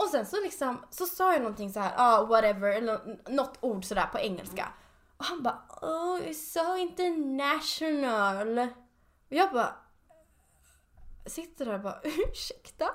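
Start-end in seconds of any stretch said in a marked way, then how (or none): 5.8-8.6 snide, mocking, sarcastic, backhanded delivery. Retelling how a man reacted to an English word, mimicking a snide remark. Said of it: "riktigt så här spydigt sa han liksom det".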